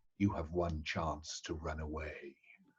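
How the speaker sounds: very low, very quiet, hushed voice. Player's character warns the lord's followers amid noise, very low voice. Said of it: "I shall say in a very low voice".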